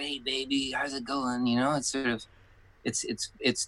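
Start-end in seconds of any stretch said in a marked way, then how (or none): 0.0-1.5 put-on old-school seventies showbiz industry patter. Showing how the actor talks: imitating John's 1970s showbiz talk. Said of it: "He talks like it's nineteen seventy".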